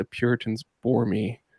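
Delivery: quiet under-the-breath whisper. Recounting what a local professor said to the speaker, retelling a whisper under breath. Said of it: "he kind of whispered under his breath".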